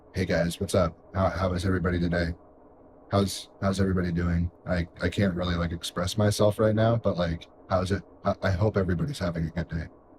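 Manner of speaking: quiet, flat, barely expressive murmured monotone. Showing how they sound when trying to be quiet, imitating own quiet monotone. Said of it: "it's so monotone that like sometimes it reminds me of like me when I'm trying to be quiet".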